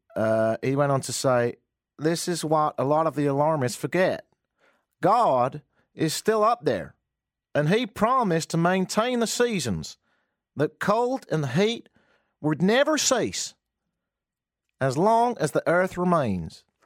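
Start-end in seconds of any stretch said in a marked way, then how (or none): 1.9-16.6 put-on, attempted American accent. Quoting a senator on the seasons in a put-on american accent. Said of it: "A little bit like Nicolas Cage in Raising Arizona".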